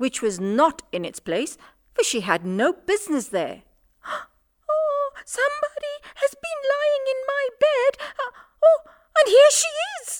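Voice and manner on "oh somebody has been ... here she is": very high, wee, tiny little bear voice. Narrating a fairy tale, voice the little, small, wee bear in his little, small, wee voice. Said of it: "said the little, small, wee bear in his little, small, wee voice".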